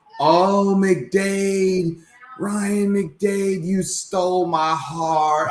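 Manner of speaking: very high, very slow, drawn-out scream. Retelling how a fan in the crowd was screaming: imitating a fan screaming. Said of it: "this fan that was up there just screaming like".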